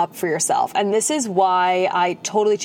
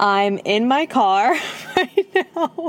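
slow, giggly talk with laughter. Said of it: "I'm literally laughing right now".

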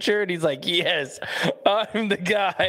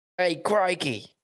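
quick put-on Australian accent, pitched up; 5 semitones higher than usual. Talking about a move to new zealand, the speaker tries an australian accent. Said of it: "Do you have a good New Zealand Australian accent?".

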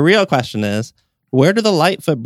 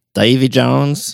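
bad put-on squid pirate accent. Giving a trivia answer about a pirate captain: terrible squid accent. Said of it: "That was a terrible accent".

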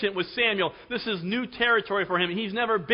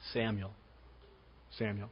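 put-on fatherly voice, lower and quieter; 12 semitones lower, 15 dB quieter than usual. Speaker acting out God calling Samuel, like a loving Heavenly Father. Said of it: "like a loving Heavenly Father".

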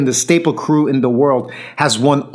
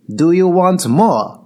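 put-on strong Korean-accented English; 4 semitones higher than usual. Retelling a guy's question mid-battle after a couple of rounds: bad Korean-accented English. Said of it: "bad English accent in the Korean way".

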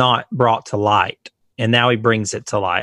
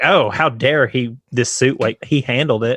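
ordinary talk

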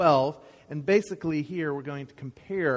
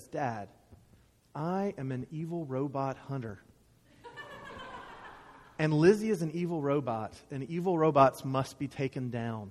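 soft, put-on, utterly serious, earnest, dead-serious voice; 6 dB quieter than usual. Retelling a son's answer to his dad: imitating William in utter seriousness. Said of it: "in utter seriousness says".

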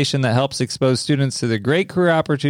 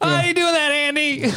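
put-on yelling voice, much higher; 14 semitones higher than usual. Speaker trying a voice he says he's never practiced, imitating Barney Fife yelling. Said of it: "he's just always yelling".

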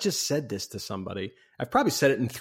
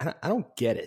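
timid, sheepish, confused, stumbling a bit. Retelling the boardroom scene from Big, imitating Tom Hanks sheepishly. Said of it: "he sort of sheepishly raises his hand and he's like".

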